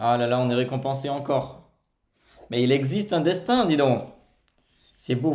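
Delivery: thrilled, overexcited loud shouting. Playing poker and being rewarded with a good card, overexcited shouting. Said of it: "faut que j'arrête de crier, pardon, je suis surexcité".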